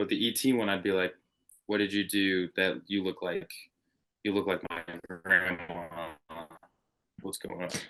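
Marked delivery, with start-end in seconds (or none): 1.7-7.7 creepy, unsettling, eerie voice. Acting out questioning an alien that looks like grandma: creepy voice. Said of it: "Your voice just went creepy".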